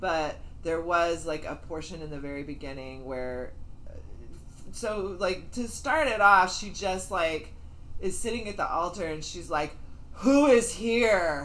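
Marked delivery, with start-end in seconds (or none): 10.1-11.4 mock, raised, commanding call with here drawn out. Speaker retells a woman at the altar opening the ceremony, imitating a super commanding voice. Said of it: "super commanding voice".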